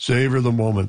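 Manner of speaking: very deep voice, pitched way down. Retelling a congratulatory phone call after an election win: Brian Mulroney deep voice. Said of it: "You can perhaps imagine his deep voice".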